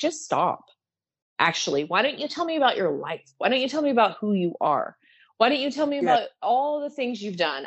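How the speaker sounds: put-on heavy German accent throughout, laid on thick. Quoting a man talking about trauma to session attendees, strong german accent impression. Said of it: "he's got a very strong German accent".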